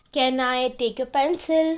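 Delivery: normal talking voice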